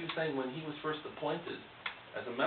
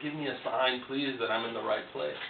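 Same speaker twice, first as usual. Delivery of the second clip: normal talking voice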